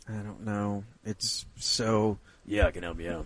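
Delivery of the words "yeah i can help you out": deep voice-of-god radio-announcer tone. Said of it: "great radio voice".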